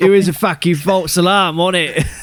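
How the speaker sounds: put-on Cockney accent, pitched very high. Translating another speaker's words into cockney, in a cockney accent.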